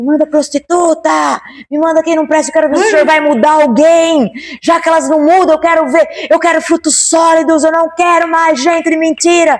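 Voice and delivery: put-on brash, insolent, high, petulant shouting. Retelling an angry prayer to God: imitating own past shouting. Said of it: "era um nível de gritaria".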